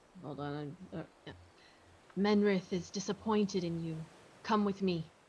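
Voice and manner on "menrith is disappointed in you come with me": whispered, low. Voicing a character sneaking up with a dagger: whisper. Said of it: "She's gonna whisper".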